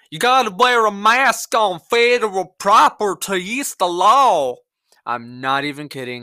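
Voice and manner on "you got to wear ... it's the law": loud, slow, drawn-out backwoods hillbilly drawl. Retelling what a man said about wearing a mask: imitating a man's hillbilly accent. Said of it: "just like this".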